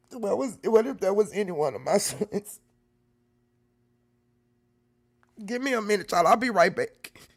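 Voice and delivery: crying while talking. Reacting to imagining it were their own son, crying while talking. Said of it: "I'm crying".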